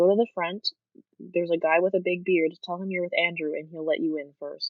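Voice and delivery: put-on nonchalant whisper. Retelling what the security guard in the line said: imitating a nonchalant whisper. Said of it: "he just nonchalantly whispers at me".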